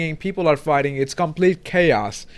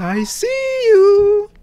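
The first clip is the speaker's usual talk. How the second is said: sugary-sweet, cooing, very high voice; 4 dB louder than usual. A player hearing familiar game dialogue imitates how Granny says it, in the sweetest voice. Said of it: "Like the sweetest voice possible".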